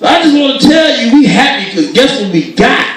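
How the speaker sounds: very high, loud shouting. Retelling a parent-in-law's christmas call to their son-in-law; imitating someone yelling on phone. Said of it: "Why are you yelling on the phone?".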